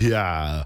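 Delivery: yeah pronounced with an extra h sound. Showing how to add H's for an Arnold Schwarzenegger voice. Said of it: "a good Arnold Schwarzenegger impression".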